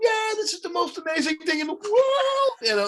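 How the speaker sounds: very high shrieking rave, the word world drawn out. Retelling watching a tattoo artist at work, the speaker imitates someone screaming. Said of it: "she's screaming, going".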